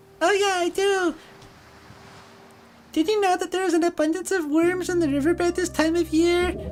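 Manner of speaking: tiny, very high, squeaky crab creature voice. A narrator voices a tiny crab answering a question, in a squeaky crab voice. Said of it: "A sound that turns into a squeaky voice".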